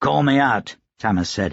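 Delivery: plain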